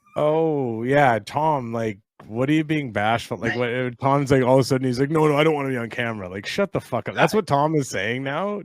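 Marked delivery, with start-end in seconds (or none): 5.1-6.3 mock passive-aggressive tone, pitched lower. Teasing Tom, who won't come over on camera, mocking Tom's passive-aggressive refusal. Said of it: "Tom is like being passive aggressive here".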